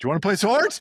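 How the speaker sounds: shrill, very high, loud shouting. Retelling what someone yelled through a locked door, retelling a yell. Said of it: "So Matt yelled out".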